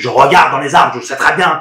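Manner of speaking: very loud, exasperated, worked-up outburst. Answering viewers who ask why they don't look in the trees, getting worked up. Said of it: "Excusez-moi, je m'énerve".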